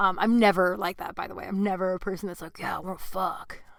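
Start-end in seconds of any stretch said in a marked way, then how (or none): 2.6-3.6 put-on bro-ish dude voice. Retelling how she texted back a guy, in a dude voice. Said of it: "that's my dude voice".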